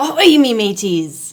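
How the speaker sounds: pirate voice, talk-like-a-pirate delivery. Greeting before a pirate kinematics problem, talking like a pirate. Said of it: "in honor of International Talk Like a Pirate Day".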